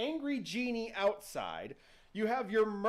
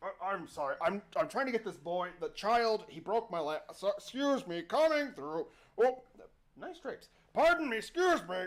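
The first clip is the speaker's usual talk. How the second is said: polite, apologetic genie voice. Telling a story, voicing the genie apologizing to people: apologetic genie voice. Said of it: "stopping to apologize to people".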